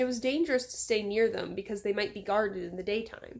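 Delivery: ordinary delivery, nothing marked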